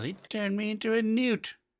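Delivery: very high, slow, drawn-out accusing yell. Telling a story where another one of the crowd yells out, retelling a yell. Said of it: "Another one yells".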